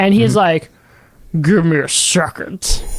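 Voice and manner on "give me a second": low, husky voice, very slow and drawn out. Retelling a phone call with the man getting the food delivery, imitating a husky voice. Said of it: "Husky voice".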